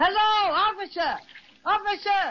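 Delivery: big-voiced, loud, high yelling call. A character calling out to a distant policeman at the beach, loud yelling. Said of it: "Let me do the yelling. It takes a big voice like mine".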